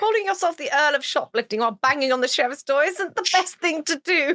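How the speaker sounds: loud, called-out voice. Shouting over the shoulder at a companion banging on a door: shouting over the shoulder. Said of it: "I I shout over my shoulder".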